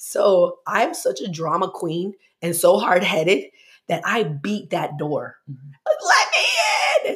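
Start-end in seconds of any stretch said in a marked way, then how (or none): 5.9-7.1 very high tantrum wail through tears. Speaker retelling beating on a door as a six-year-old, reenacting screaming and crying. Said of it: "And started screaming, crying".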